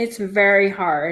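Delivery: voice choked up, on the edge of crying. Answering what it is like to parent a sick child, about to cry. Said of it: "now I'm gonna cry".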